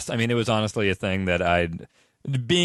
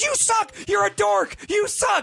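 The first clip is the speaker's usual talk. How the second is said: put-on high-pitched kid's rough, drawn-out screaming. The speaker recalls taunting a kid at ringside, then mimics the kid: imitating a kid screaming. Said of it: "it's screaming".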